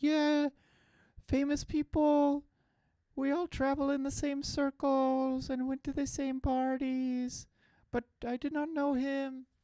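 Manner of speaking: put-on British accent, pitched very high. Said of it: "Why do I always go British with their voice?".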